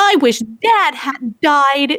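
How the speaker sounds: very slow, overacted movie child-actor delivery. Mocking a distracting kid in a christmas movie, imitating a weird, actory kid. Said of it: "that real actory weird".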